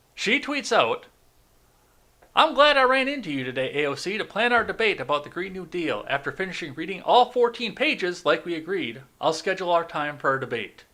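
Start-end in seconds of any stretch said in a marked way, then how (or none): 2.4-10.7 attempted put-on Georgia Southern accent. Reading out a woman's tweet aloud, put-on georgia accent. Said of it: "Please don't try to do her Georgia accent".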